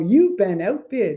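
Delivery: machine-like automated system announcement voice. Describing live online auctions and the outbid alert: Heritage robotic outbid voice. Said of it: "sort of like a robotic voice that says that".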